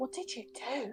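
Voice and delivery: put-on whisper. Acting out what the speaker would whisper to another person, acting out a whisper. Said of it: "I'm going to whisper to Rock".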